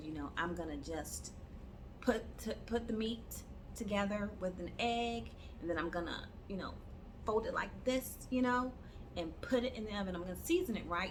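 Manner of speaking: ordinary talk, nothing marked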